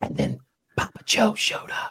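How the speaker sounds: whispered put-on impression voice. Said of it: "He does that whispering thing a lot now".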